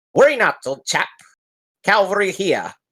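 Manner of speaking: strange small-creature voice. A game master voices an unseen figure touching a character's back: very weird halfling voice. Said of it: "in this very weird halfling voice".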